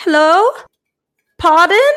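faint put-on English lilt, very high pitch. Show a friend how she talks at the end of sentences sometimes, imitating her slight accent. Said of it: "This slight accent".

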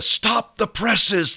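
high, slow, stretched-out, dramatic movie-style cry.

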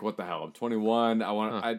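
ordinary delivery

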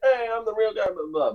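high wrestler announcer voice. Imagining a wrestler popping up after a match: imitating Sami Zayn. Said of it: "Sami Zayn popping up and being like".

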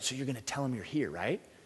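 hushed stage half-whisper. Retelling what the speaker's wife half-whispered from outside during a call from dad: retelling a half-whisper. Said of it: "she's whispering from outside".

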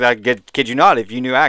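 ordinary delivery

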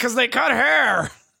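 put-on loud exclamation. Retelling a reaction to a movie trailer in a theater: retelling own loud exclamation. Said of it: "I just exclaimed loudly".

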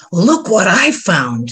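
slow, unhurried stage whisper. Narrating a story, a man suddenly reappears at the narrator's elbow: stage whisper. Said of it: "he said in a stage whisper".

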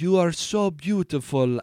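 nuanced, understated Italian accent. Showing what a nuanced accent sounds like: subtle italian accent. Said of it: "you could do a nuanced Italian accent".

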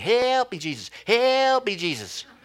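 mock high-pitched shouted yell. Speaker acting out the disciples in the boat, imitating people yelling. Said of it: "the guys in the boat who are yelling".

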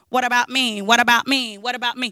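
flat, monotone, mechanical robot drone. Retelling a bit a woman used to do as a robot: robot voice. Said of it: "she used to do this robot".

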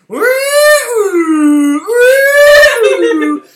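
high, loud woo imitating eerie music.

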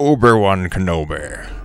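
put-on sci-fi droid cyborg general villain voice. Imagining General Grievous answering Obi-Wan in the game: General Grievous impression. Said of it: "General Grievous is just like".

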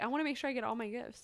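quiet, quick, sarcastic mocking aside. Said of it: "I was really being sarcastic".

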